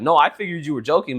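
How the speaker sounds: ordinary delivery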